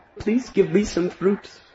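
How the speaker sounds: very high, sweet, innocent crying-out voice. Narrating a story, the child speaks to a fruit vendor, sweet innocent child Krishna voice. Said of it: "in a very sweet, innocent voice cried out".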